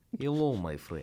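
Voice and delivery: generic, stock vampire-style Eastern European accent. Told the accent reads as vampire, the speaker greets in a generic Eastern European accent. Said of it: "it's the generic Eastern European accent".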